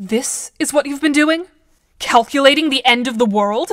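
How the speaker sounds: accusing, pointed, blaming tone. You confront her after seeing what she has been calculating, accusatory. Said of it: "You sound accusatory".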